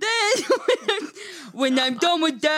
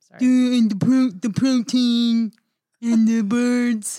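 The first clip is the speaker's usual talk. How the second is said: put-on Austrian-accented action-hero voice, pitched lower; 4 semitones lower, 4 dB louder than usual. Doing an impression for friends: Arnold Schwarzenegger voice. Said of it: "That sounds just like Arnold".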